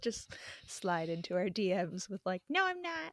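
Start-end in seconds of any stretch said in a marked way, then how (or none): 2.5-3.1 high-pitched, ordinary house-cat voice. Imagining the cat answering being called out, in Kitties cat voice. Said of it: "That was the normal cat voice".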